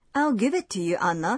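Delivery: ordinary delivery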